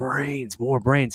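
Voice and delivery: undead, walking-dead zombie voice. Recounting a movie scene where characters run into a zombie: deep Tarman zombie voice. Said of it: "His voice is very deep".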